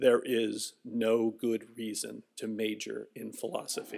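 put-on very low, hushed, old-sounding murmur. Retelling an old man's answer when asked for advice, very low voice. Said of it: "in a very low voice said".

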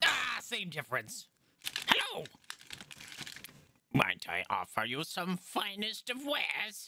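swooping-pitch goblin character voice. Voicing Gaxi the goblin offering wares to the party: Gaxi the goblin voice. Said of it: "He's like".

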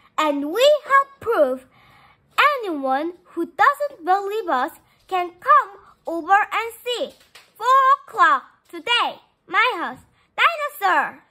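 loud, high, angry shouted yell. A girl yells at a friend who doubts her, angry yell. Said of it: "she yelled".

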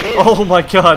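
loud, high, panicked cry.

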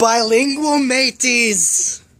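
joking, put-on mock Scottish accent. Narrating a cat hiding under a table, now in a joke scottish accent. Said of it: "but now I'm Scottish".

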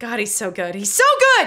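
shrieking with delight, loud, swooping pitch. Speaker raves to listeners about a good actor, excited screaming. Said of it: "I'm blowing your eardrums".

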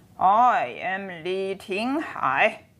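put-on slow drunken slurring, very slow slurred drawl. Reading a novel, the village head introduces himself to new arrivals; slurred speech. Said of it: "he slurred".

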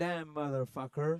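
fake American accent with rolled r. Asked by others to hear his american accent, speaker does a put-on american accent. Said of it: "Do you want to hear my American accent".

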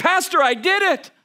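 high, stretched-out yelling. Retelling a lady in the church hallway calling out: imitating someone yelling. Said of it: "She just yells out at me".

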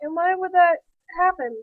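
ordinary talk

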